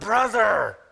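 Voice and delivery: 'brother' given weight. Rereading a verse to show a different speaker's emphasis, with stress on 'brother'. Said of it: "Here's Mary's emphasis".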